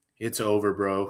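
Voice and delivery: put-on flat, dead-level monotone, vaguely European accent. Imitating how a guy talks, in a flat, monotone European voice. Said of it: "this very monotone kind of like European sort of like".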